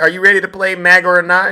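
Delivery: loud fast hyped announcer call. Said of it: "Are you out there?".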